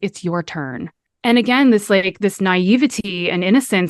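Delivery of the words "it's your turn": whispering, quieter. Telling a story, the speaker repeats what a man whispered to them. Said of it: "he whispers".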